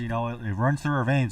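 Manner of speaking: ordinary talk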